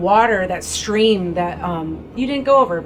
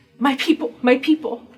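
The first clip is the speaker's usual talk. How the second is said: sobbing, crying out; 6 semitones higher than usual. A character collapses face-down, at the last straw, sobbing. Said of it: "sobbing, like crying".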